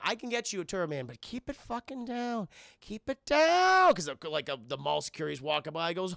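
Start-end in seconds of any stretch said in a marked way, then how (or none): 0.0-3.9 dodgy, shady, sly tone. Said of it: "Acting like a goddamn drug dealer".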